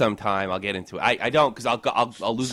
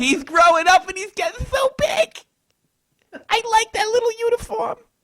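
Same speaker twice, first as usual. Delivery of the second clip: very high, fussy put-on old lady voice.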